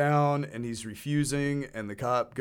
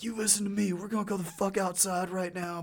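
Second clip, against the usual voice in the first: put-on yelling, higher; 8 semitones higher than usual. Retelling how the bouncer yelled at a guy: imitating someone yelling. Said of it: "and starts yelling at him".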